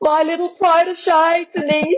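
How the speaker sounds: bad Australian accent, very high pitch, slow. Retelling a compliment on a self-edited reel: Dottie's voice in a failed Australian accent. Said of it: "trying to do the Australian accent, but failing miserably".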